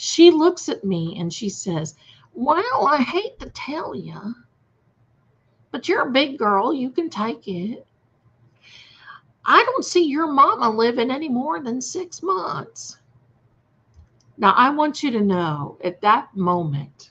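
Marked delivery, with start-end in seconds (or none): 2.3-13.0 put-on loud, high, whiny southern woman's accent. Retelling the card reader's grim prediction: imitating a loud, whining southern lady. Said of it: "she had this southern accent".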